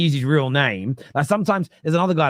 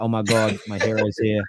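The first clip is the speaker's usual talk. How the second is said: overwhelmed, weepy, adoring gush, slow and acted out; 4 semitones lower than usual. Speaker imagining fans meeting him, imitating fans bursting into tears. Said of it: "They just burst out tears like".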